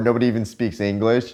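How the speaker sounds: ordinary talk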